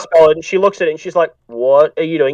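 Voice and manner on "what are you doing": on-edge, wary, suspicious tone. Voicing a townswoman questioning a spellcaster: wary townswoman, on edge. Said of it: "people in this town are very on edge".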